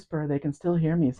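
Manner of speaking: soft, fully hushed half-whisper all the way through. Showing that the microphones still pick up a quiet voice: half-whispering. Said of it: "I can whisper".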